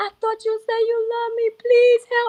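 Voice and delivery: high, tearful, crying voice. Recounting reaching out to a CNA for help; retelling a tearful plea. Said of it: "And she was looking at me and I was crying".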